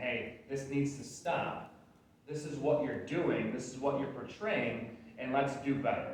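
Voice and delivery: ordinary talk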